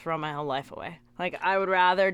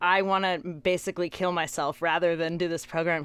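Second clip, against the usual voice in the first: ordinary talk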